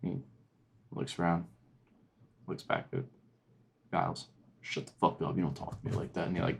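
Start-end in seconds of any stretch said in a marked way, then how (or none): 4.6-6.3 fake furious, put-on tough-guy angry voice. Voicing a prison guard snapping at a prisoner: guard acting angry. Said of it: "goes in acting all angry".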